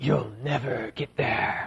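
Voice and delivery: deep, low, hushed, sinister, creepy devil voice. Speaker retells Peter's objection to Jesus, in a creepy devil voice. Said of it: "doing like his creepy devil voice".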